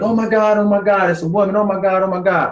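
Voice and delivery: frantic, alarmed, high-pitched panic, acted out. Retelling the moment the police arrived: imitating frantic panic. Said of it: "they're frantic".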